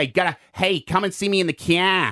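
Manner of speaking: put-on Boston accent. Joking about languages and accents, doing a put-on Boston accent. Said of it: "I'm from Boston".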